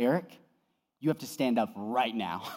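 hushed, very low, very quiet, stern voice. Retelling what his wife told him, mimicking a very stern voice. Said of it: "in a very stern voice".

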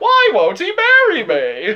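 bad comic voice, high, loud, swooping, sing-song. Joking about a movie line, slipping into a Jerry Seinfeld voice. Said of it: "coming out as fucking, like, Jerry Seinfeld".

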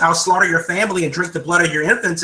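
plain

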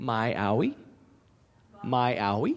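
rising question-like inflection on owie. Imitating how he says it, with upward question inflection. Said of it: "he says that with that upward inflection".

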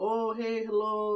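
high-pitched put-on Indian accent. Speaker retelling a phone call with a lady at Dunkin, imitating an Indian accent. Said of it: "oh, that was racist".

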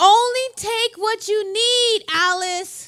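put-on loud, drawn-out, high shouting yell. Retelling a dream where her husband calls out: imitating a yell. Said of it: "he yells at me".

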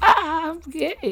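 put-on high-pitched cartoon teenager. Pitching a podcast bit, the speaker does a Morty impression. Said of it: "That's my impression of Morty".

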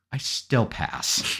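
put-on condescending voice. Retelling how a friend refused to change his pass, imitating a condescending reply. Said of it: "looks at me very condescendingly and goes".

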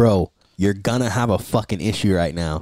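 mock serious, stern, firm no-nonsense tone. Retelling a warning to a man sitting on the car: retelling a stern warning. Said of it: "I had to say it with, like, stern".

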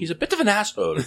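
put-on Irish accent, very high. Retelling what the parents said about the kid, in an Irish accent. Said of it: "what kind of accent was that?".

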